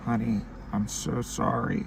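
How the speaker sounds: slow, crying, tearful voice, words through tears. Retelling a phone call where mom apologizes: imitating mom crying. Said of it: "she was crying".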